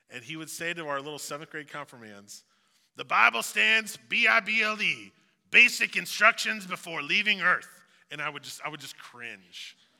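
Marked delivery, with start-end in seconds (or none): 3.0-7.7 very loud, high, raspy voice. Recalling Ken speaking to seventh grade confirmands, the speaker does Ken's raspy voice. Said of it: "he had this raspy voice like this".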